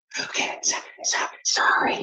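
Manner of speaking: soft whisper with laughter in it.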